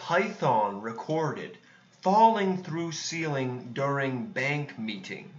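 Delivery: automated instructional-video narrator voice. Reading the next news story aloud, in a narrator voice. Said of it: "That's your narrator voice".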